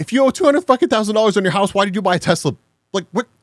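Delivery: incredulous, fed-up, furious raging tirade. Streamer reacting to a video with chat, raging. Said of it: "I'm raging right now".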